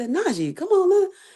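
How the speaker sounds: very high-pitched, low-key, coaxing tone. Retelling how she watched the fights at first: retelling own low-toned words. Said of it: "low tone".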